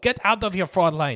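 very loud, high, bad attempted German accent. Acting out someone throwing a boot at somebody, attempted German accent. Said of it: "Going for German".

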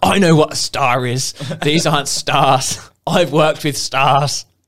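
acted, indignant, high, angry shouting rant. Retelling a row with a manager, the speaker acts out the manager shouting. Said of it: "started shouting at me".

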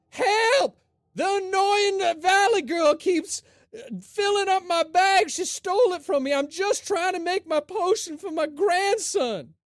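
shouting. Voicing a character in the game, yelling for help. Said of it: "I'm gonna yell out".

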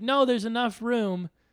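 acted, very high-pitched shout. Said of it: "shouting out the window at each other".

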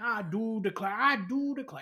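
high cartoon rooster voice. Joking about an actor in a film who talks like a cartoon rooster, in a Foghorn Leghorn voice. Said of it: "talking like Foghorn Leghorn".

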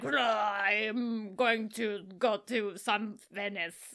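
low, soft, muddled, stretched-out masked-character voice. Describing a role under heavy makeup, the speaker attempts an impression of the masked character. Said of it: "you just hear him like".

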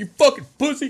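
very high-pitched, shrill, jeering yell. Describing parade videos where people jeer a man walking the route, imitating a crowd yelling. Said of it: "just yelling".

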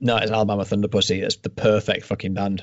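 ordinary talk

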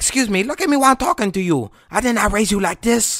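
furious, very high, angry scolding yell. Speaker copies their mom scolding them, imitating an angry mom yelling. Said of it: "The entire time I'm yelling".

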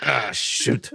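loud grunted exclamation. Redoing the character's catchphrase the way it should sound: grunted. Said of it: "it's more like a grunt".

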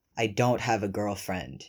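dry deadpan delivery. Teased about having a girlfriend, he replies deadpan. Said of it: "he deadpans".

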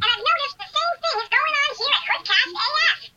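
cartoon chipmunk character voice. Leaving a voice message as Chip, complaining of no respect: Chip voice. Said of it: "It's me, Chip, from Chip and Dale's Rescue Rangers".

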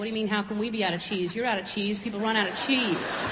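ordinary talk

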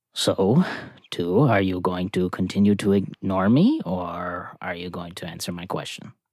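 speaking low and softly. A role-play character asks a companion something so only they can hear, lowered voice. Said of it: "He's gonna lower his voice a little bit now".

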